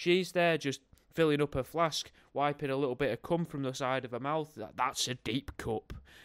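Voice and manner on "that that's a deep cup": tv commercial announcer voiceover voice. Pitching a joke advert, voicing the voiceover line: advert voiceover voice. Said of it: "the voiceover says that".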